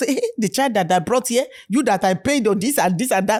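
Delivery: ordinary delivery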